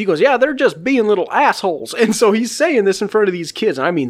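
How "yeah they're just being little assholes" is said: put-on heavy, broad Southern accent laid on thick. Retelling what a man said about some kids, in a thick Southern accent. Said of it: "thick Southern accent".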